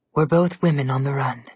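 plain reading voice

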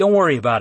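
ordinary delivery

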